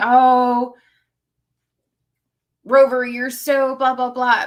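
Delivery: put-on very loud, cooing baby talk. Retelling how a woman spoke to her dog, in a baby voice. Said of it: "using this kind of baby voice to talk to the dog".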